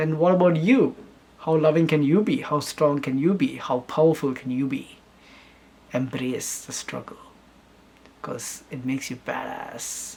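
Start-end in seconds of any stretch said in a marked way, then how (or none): 1.4-10.1 theatrical, big, dramatic grand-speech delivery. Speaker turning to address the listener directly, in a dramatic voice. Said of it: "I love speaking that that that dramatic voice".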